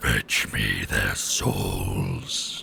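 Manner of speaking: very low, very slow, rasping, growling dragon voice. Summoning a voice the speaker calls dragon voice, close to the mic. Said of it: "I have a voice I do called dragon voice".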